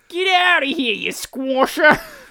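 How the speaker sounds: exaggerated fake Australian accent. Joking around trying out accents with others; Australian accent. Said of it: "That was very Aussie".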